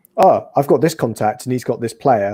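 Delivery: ordinary talk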